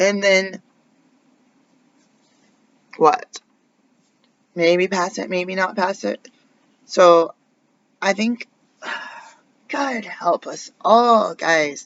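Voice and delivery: voice on the verge of tears. Addressing the audience directly, on the verge of tears. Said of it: "I'm about to cry".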